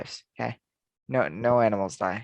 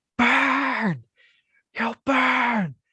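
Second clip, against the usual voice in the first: very high, stretched-out, drawn-out shout; 13 semitones higher, 4 dB louder than usual. Imagining the sun shouting threats at people: the sun yelling. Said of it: "the sun just yelling".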